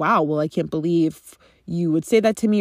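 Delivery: ordinary talk, nothing marked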